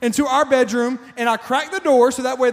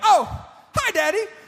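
surprised, caught off guard, high little voice; 7 semitones higher than usual. A father retells his daughter spotting him on the bed, imitating Kaylee's surprised hello. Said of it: "Like she was surprised".

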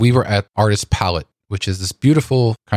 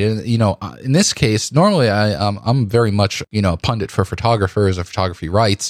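ordinary talk

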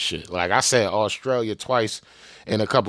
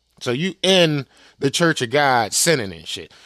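plain

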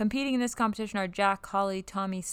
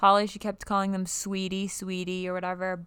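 ordinary delivery

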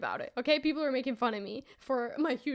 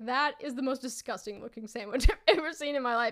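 ordinary delivery

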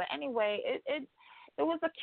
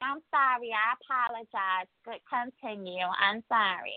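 slow, stuck-up, lofty, haughty voice; 2 semitones higher than usual. Retelling a woman's apology after the show's star cut her off, mock-haughty tone. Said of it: "Very haughty and stuck up".

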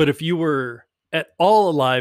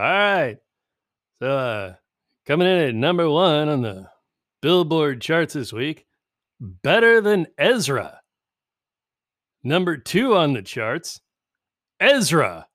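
comic newscaster-style voice with headline-reading cadence; 3 semitones higher than usual. Retelling a Weekend Update joke: Norm Macdonald voice. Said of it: "I'm gonna do it in Norm voice".

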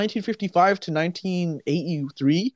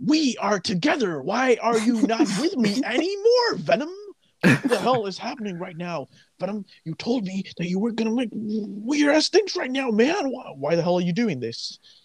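put-on, movie-style Brooklyn accent, ranting delivery; 4 semitones higher than usual. Discussing the Venom casting, imitating Tom Hardy's Brooklyn accent. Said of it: "his accent is meant to be Brooklyn".

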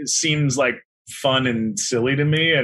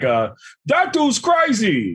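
high, swooping rabbit voice; 8 semitones higher than usual. Asked to give the rabbit's one line, do the rabbit in a Tracy Morgan voice. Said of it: "give us the rabbit".

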